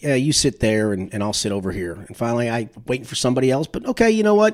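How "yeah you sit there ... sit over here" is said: low, resigned, giving-in tone. Retelling what a dad said about seating, imitating his resigned voice. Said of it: "with a resigned voice go".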